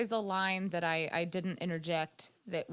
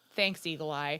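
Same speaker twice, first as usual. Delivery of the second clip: imitated flat delivery, lower pitched; 3 semitones lower than usual. Retelling a scene with Leela, the speaker imitates Fry's deadpan. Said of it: "deadpan as shit".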